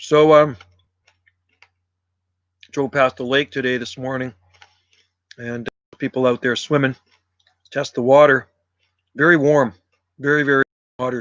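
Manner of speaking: talking while chewing, food in mouth. Livestreamer chatting to viewers during lunch: talking while eating. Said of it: "I'm eating my lunch".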